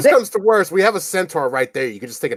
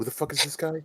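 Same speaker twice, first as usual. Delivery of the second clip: very quiet, barely audible whisper; 13 dB quieter than usual. Leaning over to another character in the scene: whisper. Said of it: "I lean over and whisper to Beck".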